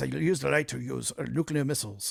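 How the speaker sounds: bad put-on Russian accent. Quoting what Putin always says, bad Putin Russian accent. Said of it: "I'm not even doing a good Russian accent".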